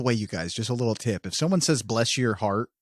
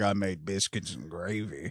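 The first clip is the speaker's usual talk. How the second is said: sinister, low, hushed put-on psycho killer voice; 4 semitones lower, 7 dB quieter than usual. Joking about how they would get murdered, psycho killer voice. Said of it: "some psycho killer would be like".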